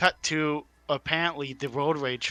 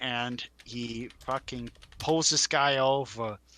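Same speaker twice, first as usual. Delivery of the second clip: ordinary delivery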